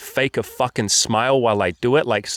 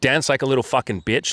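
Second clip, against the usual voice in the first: ordinary talk, nothing marked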